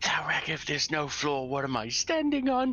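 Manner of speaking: hushed whisper. A roleplaying character freezes and whispers a question to a companion, whispering. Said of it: "and he whispers to Thalrak".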